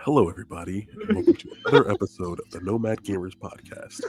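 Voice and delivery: talking as silently as possible, very quiet close-mic voice. Opening the podcast right into the mic as asked: talking as silently as possible. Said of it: "Talk as silently as you can right into the mic".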